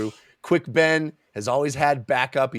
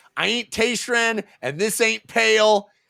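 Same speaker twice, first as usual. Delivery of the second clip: mock shrill, pitched-way-up, very high taunting yell; 10 semitones higher, 3 dB louder than usual. Retelling a book scene where a character yells at attackers: imitating Quick Ben yelling. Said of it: "yelling at the, the Naruk".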